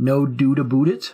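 exaggerated, over-the-top Canadian accent. Speaker asked why they have an American accent, trying an exaggerated Canadian accent. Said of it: "Would that be more Canadian?".

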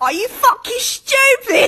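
very high, irate, angry put-on British accent. Joking about how British people react, mock-angry British accent. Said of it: "British people get mad and be like".

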